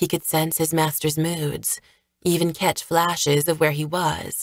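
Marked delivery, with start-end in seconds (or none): none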